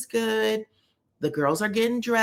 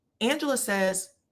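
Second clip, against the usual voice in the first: usual speaking voice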